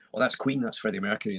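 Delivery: plain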